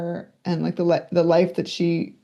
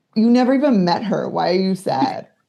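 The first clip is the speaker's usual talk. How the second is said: mock bewildered, confused voice. Retelling mom's reaction when she burst into tears as a child, imitating mom's confusion. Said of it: "my mom was so confused".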